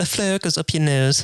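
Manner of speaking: imitated British accent. Quoting a British man, in a British accent impression. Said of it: "he's British. So if you're wondering why his, his accent was funny".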